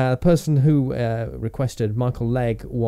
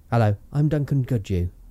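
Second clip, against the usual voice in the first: put-on southeast English accent. Trying an impression of Duncan Goodhue after being asked: Duncan Goodhue impression. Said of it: "do you want me to try him?".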